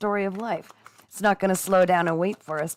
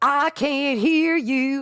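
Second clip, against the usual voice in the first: very slow, drawn-out, pitched-up drill sergeant bark; 6 semitones higher, 4 dB louder than usual. Rallying listeners about breaking through old patterns: drill sergeant shouting. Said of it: "I felt like a drill sergeant just then".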